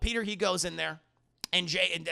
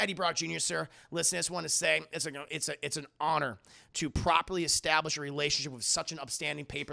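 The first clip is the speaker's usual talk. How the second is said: normal talking voice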